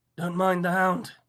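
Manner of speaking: very loud, rough, grainy, gritty voice. Narrator reading a tall figure by the fireplace speaking to Arthur, in a gritty voice. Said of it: "came a gritty voice".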